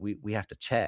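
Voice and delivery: jittery, halting, stumbling, nervous voice. Retelling a scene, imitating nervous Xander. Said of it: "Xander's nervous laugh".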